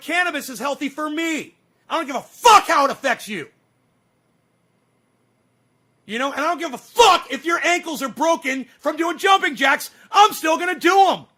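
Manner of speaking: loud, worked-up, aggravated angry yelling. Ranting at listeners about people's hypocrisy: yelling and screaming, aggravated. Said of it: "why I'm yelling and screaming and, and so aggravated right now".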